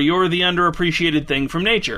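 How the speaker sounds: ordinary talk, nothing marked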